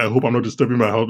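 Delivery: plain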